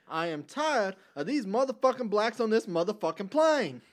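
loud, high-pitched, barking out every word. Doing a parody line as Samuel L. Jackson. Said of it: "Samuel L. Jackson".

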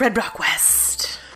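slow, soft dramatic whisper. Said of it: "whispered show title echo".

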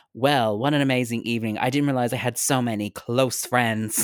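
plain

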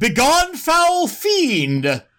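piercing, very high, loud shout. Player's character shouts from the shadows to distract it, shouting. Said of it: "And I shout".

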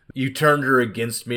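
ordinary delivery

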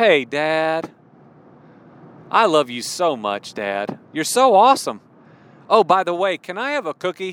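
play-acted sweet-talking child voice. Imitating a son who asks his dad for treats: imitating a child asking sweetly. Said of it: "always delivered in such sweetness".

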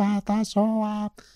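imitated elderly woman's voice.

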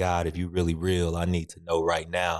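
put-on tearful crying out. Retelling a prayer from bed on a depressed day: retelling a tearful cry to god. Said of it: "lying in my bed crying and just kinda crying out".

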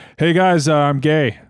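put-on casual child voice. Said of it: "so casual".

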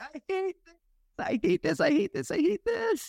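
very high, terrified, repeated words. Speaker describing a ride photo, imitating a scared rider. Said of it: "she's real scared".

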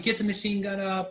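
put-on, high-pitched yelling. Speaker retells his vehicle commander's order when the machine gun jammed, retelling a yell. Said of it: "He started yelling at me".

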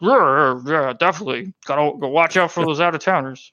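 speaking with mouth full of pie. Game narrator voicing the town sheriff, talking with a mouthful of pie. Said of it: "he's got like a mouthful of pie now".

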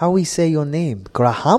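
put-on Spanish accent. Retelling what Spanish people he worked with always ask him, in a Spanish accent. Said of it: "Oh, crap, that accents".

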